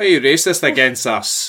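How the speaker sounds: loud, fake, put-on Scottish accent. Chatting with another person, one line done in a false scottish accent. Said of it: "Why am I doing a false Scottish accent?".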